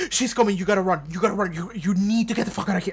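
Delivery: mock scared, desperate, fearful delivery. Retelling Ben warning Dawn to flee: imitating Ben's desperate warning. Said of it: "how desperate he turned immediately".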